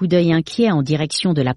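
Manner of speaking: plain reading voice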